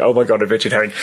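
dry, sarcastic exclamation. Explaining what a fan said at his show, imitating a sarcastic fan. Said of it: "the caliber of sarcastic fan that I have saying".

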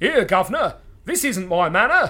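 put-on London Cockney accent. Trying something else on a fellow going the wrong way, in a Cockney accent.

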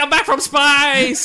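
loud, high-pitched, slow, declaiming. Imagining a movie ending, the Hulk lands from space: Hulk voice. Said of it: "he's like".

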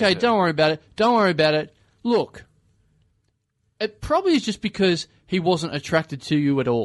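ordinary delivery

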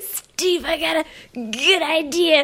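put-on high, loose, drunken voice. Acting out a drunken movie pitch at a party, in a Rick impression. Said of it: "You're doing your Rick Brad voice".

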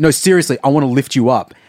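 put-on macho bravado, insistent. Retelling a man insisting he can lift Penn Jillette up: imitating macho bravado. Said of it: "he gets real like macho about it".

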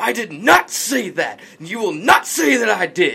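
mock temper, loud, high, furious outburst. Retelling how a man got angry and pointed at her face, retelling an angry outburst. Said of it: "he gets angry".

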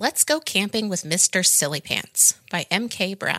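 plain reading voice

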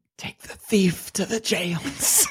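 faint whisper, just barely audible. Game narrator voicing Mycroft ordering the guard to take the thief away; barely a whisper. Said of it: "barely a whisper".

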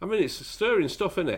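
ordinary delivery

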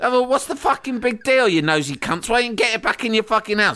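play-acted, high-pitched, furious cockney yelling. Speaker retells shouting back at people talking about them, growing cockney and cross. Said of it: "I'm just shouting at them louder and louder, becoming more and more cockney and cross".

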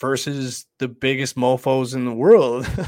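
loud, emphatic, mocking delivery, punched out.

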